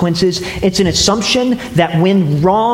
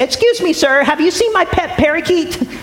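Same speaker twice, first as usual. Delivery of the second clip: calling out in a high voice. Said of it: "call out to him and say".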